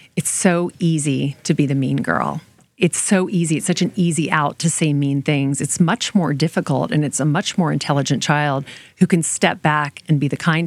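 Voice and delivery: ordinary talk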